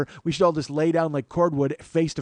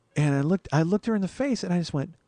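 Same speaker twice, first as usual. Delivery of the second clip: plain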